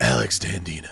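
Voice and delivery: very low, very deep put-on voice. Saying a name after announcing a Kathleen Turner voice: Kathleen Turner voice. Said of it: "let me do it in my Kathleen Turner voice".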